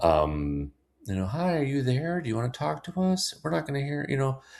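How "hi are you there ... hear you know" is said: very high-pitched, sugary, sweet, doting voice. Describing a woman sitting before a tree and talking to it, imitating sweet doting talk. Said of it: "talk very sweetly".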